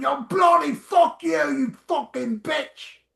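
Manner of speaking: mock high, rough, foul-mouthed, raging screaming fit. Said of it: "He's screaming at some woman".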